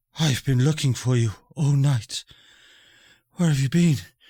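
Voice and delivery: panting, breathless character voice. Voicing Ella Planestrider as she limps in to the group, panting while talking. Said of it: "she just starts panting".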